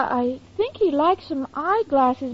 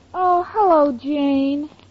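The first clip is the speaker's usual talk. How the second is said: weary, worn-out, tired voice with drawn-out word; 2 semitones lower than usual. Answering a phone call from jane, who hears she sounds tired: tired voice. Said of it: "you sound tired".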